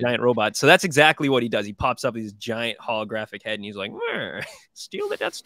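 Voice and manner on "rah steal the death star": very high, wildly swooping, squealing villain voice. Describing a game's final boss hologram: Prince Xizor voice. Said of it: "I'm doing that voice for Prince Xizor".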